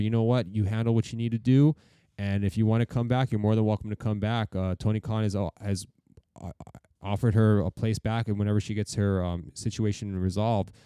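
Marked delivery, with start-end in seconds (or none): none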